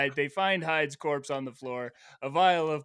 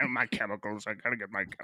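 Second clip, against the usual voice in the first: put-on muttering villain voice, lower and quieter; 6 semitones lower, 6 dB quieter than usual. Retelling the story, voicing Hyde shut behind the door: Hyde muttering. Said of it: "Hyde's in there muttering".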